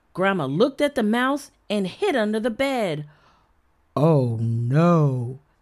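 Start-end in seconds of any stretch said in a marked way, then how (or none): 4.0-5.4 very low voice with no drawn out. Narrator reading the father's line in a story, said softly. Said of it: "said Dad softly".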